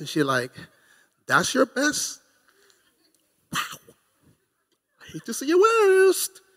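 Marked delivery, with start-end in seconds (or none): 1.3-6.3 quiet, calm, sing-song voice, never raised. Imitating a quiet wife insulting her husband: quiet, not raising her tone. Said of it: "she's not yelling".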